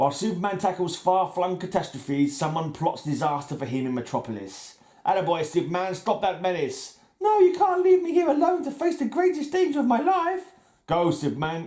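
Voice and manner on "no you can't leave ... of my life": clumsy, bad put-on woman's voice, very high-pitched. Acting out a superman radio show, the speaker plays a woman: bad put-on woman's voice. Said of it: "my woman's voices aren't too good".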